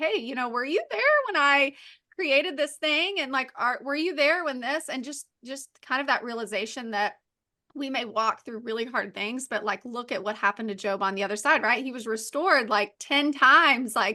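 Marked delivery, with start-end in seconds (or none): 0.0-4.9 put-on sarcastic voice, higher pitch. Retelling a Bible passage where God answers Job: sarcastic God voice. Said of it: "God, you know, sarcastically is like".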